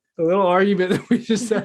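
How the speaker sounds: talking while laughing. Answering another speaker who asks why, laughing while talking. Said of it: "I'm still laughing at that".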